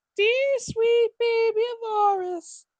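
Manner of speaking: cartoon goblin king voice. Voicing a halfling character's line again: Mister Hanky voice. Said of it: "I was going for Mister Hanky".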